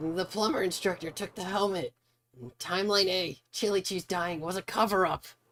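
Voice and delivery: very high ranting voice. Trying out a voice while playing a game: conspiracy theorist voice. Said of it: "conspiracy theorist voice".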